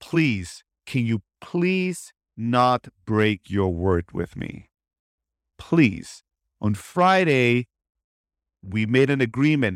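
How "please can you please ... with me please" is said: put-on pleading, much lower. Retelling what a pleading voice said to them, imitating a pleading voice. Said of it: "it was more of a pleading voice that said".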